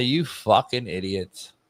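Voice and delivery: blunt, berating voice. Imagining being the team's football coach walking in: speaking as the football coach. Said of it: "If I'm the football coach of that team, I walk in there and I say".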